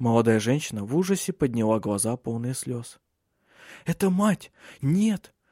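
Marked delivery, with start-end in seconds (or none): 3.8-5.3 horrified whisper, slower. Reading a novel aloud, a young woman hears her mother at the door, horrified whisper. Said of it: "Прошептала она".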